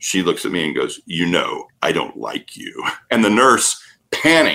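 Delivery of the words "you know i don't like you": very deep male voice, whispered and hushed. Retelling a woman who turned and spoke to him in a very deep male voice. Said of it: "in this very, very deep male voice".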